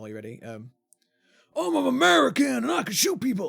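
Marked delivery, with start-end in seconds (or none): 1.6-3.5 rough, creaky, very high and loud voice. Doing an impression after being asked: Jon Bernthal impression. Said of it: "That's a Jon Bernthal impression".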